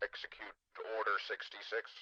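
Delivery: armored trooper voice, as if through a megaphone. Showing off the weird voices on offer, speak in a stormtrooper megaphone voice. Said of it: "This is like a stormtrooper voice, a megaphone".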